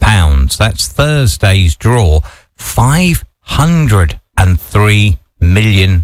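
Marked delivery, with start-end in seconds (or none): 2.6-6.0 deliberately slow. Radio host speaking to listeners, repeating a figure, said slowly. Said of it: "I'll say that slowly".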